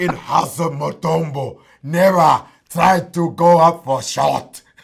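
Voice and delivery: very loud, booming, full-volume voice. Joking about a basketball player blocking shots, imitating Dikembe Mutombo. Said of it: "Remember Mutombo?".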